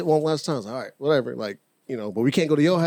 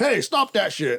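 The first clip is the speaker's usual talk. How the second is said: big voice, much higher; 6 semitones higher than usual. Telling a story, contrasting the tiny voice heard with a big voice. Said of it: "Not a big voice".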